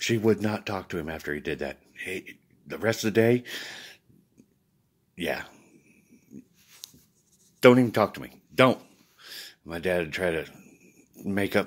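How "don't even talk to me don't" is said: put-on, very loud, high, furious angry shout. Retelling what his mother told his father: imitating an angry mother. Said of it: "my mama would be so mad at him".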